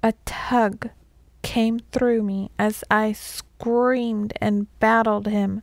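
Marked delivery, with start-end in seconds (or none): none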